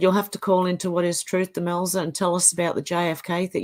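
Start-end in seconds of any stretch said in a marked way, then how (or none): none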